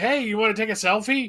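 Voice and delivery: approachable, casual voice. Acting out what the actor might say to a fan: imitating friendly approachable energy. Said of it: "that's the energy he gives".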